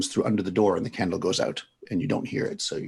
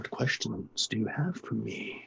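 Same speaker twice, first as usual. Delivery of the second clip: very soft, disembodied voice coming from everywhere at once; 10 dB quieter than usual. The narrator voices an unseen presence asking what questions the listener has, very soft, disembodied voice. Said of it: "a very soft voice that seems to be coming from nowhere yet everywhere at once".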